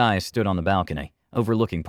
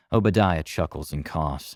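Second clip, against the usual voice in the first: ordinary delivery, nothing marked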